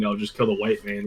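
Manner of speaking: ordinary talk, nothing marked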